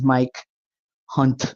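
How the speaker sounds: clear pause after first name, before last name. Saying her son-in-law's name carefully: pause between Mike and Hunt. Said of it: "I'm not saying them together. I put a pause in between them".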